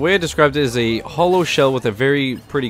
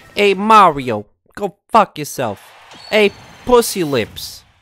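put-on New York accent, higher and slower; 6 semitones higher, 3 dB louder than usual. Recommending a video, the speaker imitates Game Grumps' Baby Bowser voice. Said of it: "acting like he's from New York or New Jersey".

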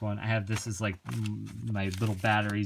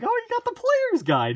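squeaky, very high-pitched put-on character voice; 8 dB louder than usual. Retelling what Pat said while signing the player's guide, in the Pat voice. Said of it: "He said it in the Pat voice".

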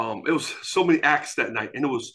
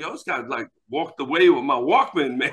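normal talking voice

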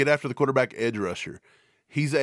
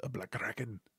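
very quiet, hushed, fake Irish accent; 3 semitones lower, 15 dB quieter than usual. Reading out a donor's name, saying it as if irish: put-on irish accent. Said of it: "say his name as if I'm Irish".

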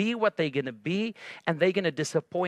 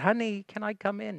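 gentle, coaxing, kindly motherly voice; 3 semitones higher, 3 dB quieter than usual. Retelling how a mother knocks again at her daughter's door, imitating a gentle mother. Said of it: "She tried again with a gentle spirit".

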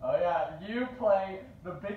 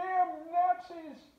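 put-on very high geezer voice; 11 semitones higher than usual. Describing someone's impressions, demonstrating his stereotypical old man voice. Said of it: "a pretty good stereotypical old man voice".

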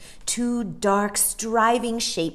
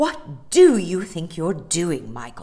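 fierce, ferocious, demanding scolding tone; 3 semitones lower, 5 dB louder than usual. A woman confronts a boy who is yelling at the sea; ferocious. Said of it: "Mary Poppins sounded ferocious".

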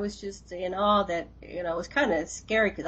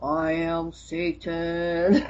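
very strange, weird voice, much slower; 3 semitones lower than usual. Retelling a possessed man he sat beside, speaking in a very strange voice. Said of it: "in a very strange voice".

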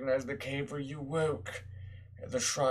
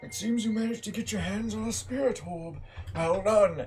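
raised, pitched-up, put-on old man voice; 7 semitones higher, 5 dB louder than usual. Streamer voicing the old man character in a game, old man voice. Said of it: "I gotta do the voice again".

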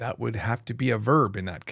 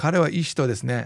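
ordinary talk, nothing marked

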